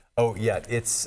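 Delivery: ordinary talk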